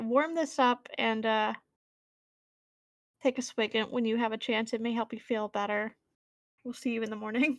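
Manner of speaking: ordinary talk, nothing marked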